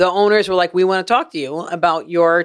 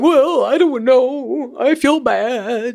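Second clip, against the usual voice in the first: put-on pitiful dog voice, high and very slow; 6 semitones higher than usual. Retelling own reply to the club with a pitiful voice like Peppy's. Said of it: "you sound like the voice Peppy would make".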